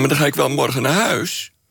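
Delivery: statement tune rising upward at the end on huis. Imitating how young women end sentences, rising question-like ending. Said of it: "hun zin een beetje laten eindigen met een vragende intonatie".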